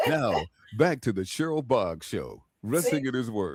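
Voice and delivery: commercial radio announcer delivery, voiceover style. Answering a request for a commercial: voiceover announcer voice. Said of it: "Make me a commercial".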